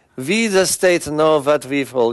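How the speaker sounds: put-on German villain accent. Mocking the mindset behind a piece of legislation, in a WWII movie Nazi accent. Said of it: "it just sounds like a World War II Nazi movie".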